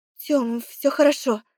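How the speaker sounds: trembling, quavering, shaky voice faking calm. A sister falsely reassures her brother, in a trembling voice. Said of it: "Вру дрожащим голосом".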